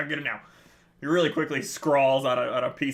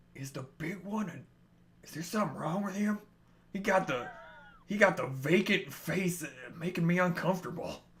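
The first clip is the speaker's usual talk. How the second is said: hushed half-whisper with barely any voice; 3 semitones higher, 7 dB quieter than usual. Voicing a character who pulls another character in close, half-whispering. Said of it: "he pulls you in real close and he whispers".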